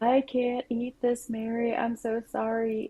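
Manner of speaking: play-acted tearful weeping, high and slow. Retelling being a child who started crying over soup: imitating crying. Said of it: "I started crying".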